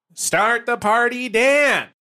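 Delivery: squeaky, very high character voice. Saying the show's opening line as an impression of Ginny. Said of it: "best Ginny impression".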